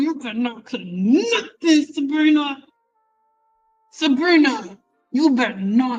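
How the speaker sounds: through clenched teeth. Warning a listener not to cut anything, talking through gritted teeth. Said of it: "I'm talking through my teeth".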